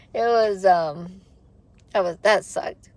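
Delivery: words pushed through tears. Before going to pick up a puppy, a speaker talks while crying. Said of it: "sorry, crying before I like go pick up the puppy".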